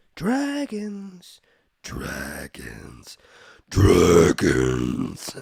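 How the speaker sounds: demonic voice.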